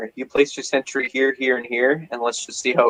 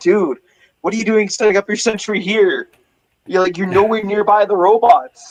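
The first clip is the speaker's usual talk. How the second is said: put-on yelling, higher; 8 semitones higher, 4 dB louder than usual. Retelling how the team yelled at a teammate: imitating yelling at a teammate. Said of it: "we were yelling at him".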